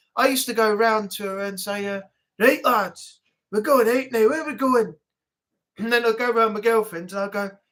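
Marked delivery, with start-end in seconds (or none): 2.4-5.0 put-on Scottish accent with a raised voice. Recalling the accent his ex-girlfriend hated: scottish accent. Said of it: "when you do the Scottish accent".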